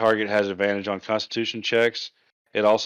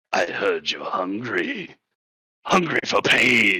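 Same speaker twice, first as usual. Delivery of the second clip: sinister, ominous goblin voice, very slow and drawn-out. A player tries out a line for their character, in an ominous goblin voice. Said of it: "say in like an ominous goblin voice".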